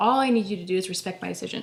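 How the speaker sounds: normal talking voice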